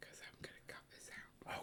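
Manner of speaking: hushed whisper. Explaining to the other speaker why they are whispering, whispering. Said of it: "Why are we whispering?".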